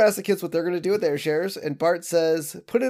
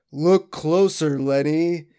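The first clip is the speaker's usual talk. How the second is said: deep, echoey, proclaiming voice; 2 semitones lower than usual. Retell a scene where a huge, gold-plated Homer answers Lenny, in Homer's deep echoey voice. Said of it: "Homer's uh deep echoey voice".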